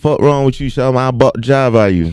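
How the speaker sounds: put-on Savannah accent. Retelling a fight in Savannah, imitating a Savannah accent.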